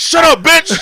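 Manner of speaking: very high, shrill, loud shouted outburst. Retelling a comedy clip where someone interrupts a heckler: loud Charlie Murphy yell. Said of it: "you know Charlie Murphy's voice".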